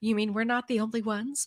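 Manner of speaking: put-on shocked surprise, heavily sarcastic. Joking about other markets outside the United States: sarcastic mock surprise. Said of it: "also sarcastically saying that".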